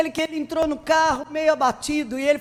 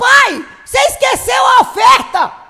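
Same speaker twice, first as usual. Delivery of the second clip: put-on high, very loud yell of a little child; 8 semitones higher, 9 dB louder than usual. Retelling a boy calling up to his father in church: imitating a child shouting. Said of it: "Aí ele gritou".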